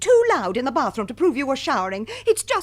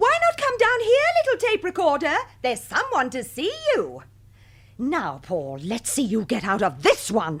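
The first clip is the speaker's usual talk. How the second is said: slightly upset, clearly bothered voice. A character calls Paul down to see a visitor, sounding a bit upset. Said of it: "You sound a bit upset".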